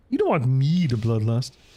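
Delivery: put-on puppet frog voice. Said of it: "I can kind of sound like Kermit the Frog".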